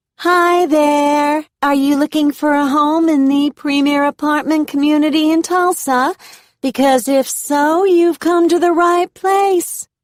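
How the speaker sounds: loud, high, whiny Midwestern drawl. Reading a bubbly leasing agent greeting a visitor: Midwestern drawl, Kardashian whine. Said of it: "Her Midwestern drawl, her Kardashian whine".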